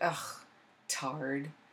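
put-on muttering under breath. Retelling the husband's remark at the park, imitating him under his breath. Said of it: "he under his breath said".

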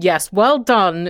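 play-acted sharp-edged, acidic, cutting, disapproving tone. Speaker retells Granny's reply to their childhood efforts, in a mock-acidic voice. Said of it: "in this kind of acidic voice".

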